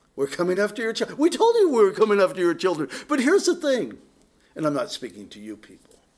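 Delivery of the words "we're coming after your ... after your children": mocking, sarcastic, swooping sing-song delivery. Speaker voices someone else's message to listeners, in a put-on sarcastic tone. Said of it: "I'm saying this sarcastically".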